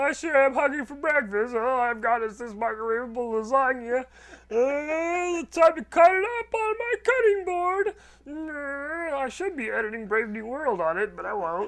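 very high, slow, mocking put-on voice. Mocking a friend over what they said at breakfast this morning, mocking imitation of a friend. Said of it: "of this mocking voice".

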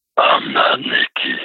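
deepest, darkest demonic voice. Retelling the voice that answered a whisper to nikki, deep satanic voice. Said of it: "the most deep satanic voice you could ever imagine".

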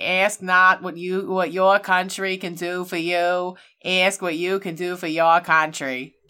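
put-on Boston accent. Trying a JFK impression of his famous line. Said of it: "mine is just like".

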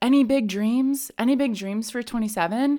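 plain

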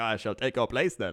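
suave, charming English gentleman leading-man voice. Retelling the train man's greeting: imitating a Hugh Grant-like man. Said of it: "basically Hugh Grant from every Hugh Grant movie".

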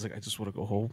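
mock mutter under breath. Retelling what the delayed man beside him kept saying, retelling a mutter under breath. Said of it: "he's just saying under his breath".

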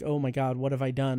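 ordinary talk, nothing marked

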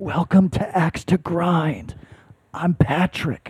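hushed, whispered voice. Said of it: "I'm gonna whisper this entire episode".

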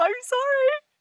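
speaking through a giggle fit. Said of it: "I can't stop".

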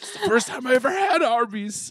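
very high, weepy, choked-up sobbing voice. Retelling how D'Angelo cried about a first taste of Arby's: mock crying like D'Angelo. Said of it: "D'Angelo started crying about Arby's".

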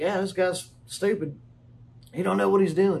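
normal talking voice

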